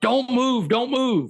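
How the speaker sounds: high, top-of-the-lungs scream. Retelling waking up under a SWAT cop, imitating the cop screaming. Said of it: "he's screaming at the top of his lungs".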